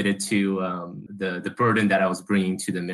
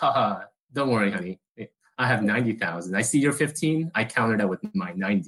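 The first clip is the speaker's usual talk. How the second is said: usual speaking voice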